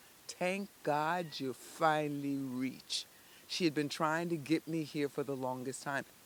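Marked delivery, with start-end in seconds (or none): 0.3-3.1 put-on thick Bahamian accent. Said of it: "a female voice with a thick Bahamian accent".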